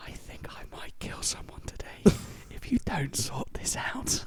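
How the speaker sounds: drawn-out, slow, hushed whisper. Retelling what the speaker once whispered to a man, retelling a whisper. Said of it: "and I like whisper to him".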